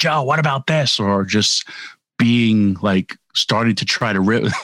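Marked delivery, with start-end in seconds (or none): 0.0-1.0 loud, high-pitched yell. Wishing Knobs of the Nasty Boys were here, act out his call to Joe, imitating Knobs yelling loudly. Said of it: "his loud voice yelling".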